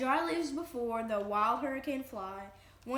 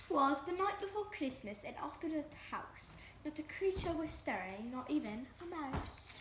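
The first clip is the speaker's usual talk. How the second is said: carefully precise put-on British accent; 3 semitones higher, 6 dB quieter than usual. Asked to read the first page aloud, reading it in a British accent. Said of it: "read the first page in your British accent".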